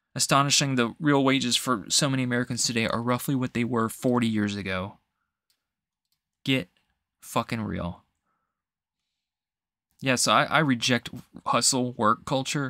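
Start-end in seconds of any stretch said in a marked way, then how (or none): 6.4-8.0 heated, slower pace. Speaker ranting about decades of flat real wages: getting heated. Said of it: "I'm getting a little heated about this".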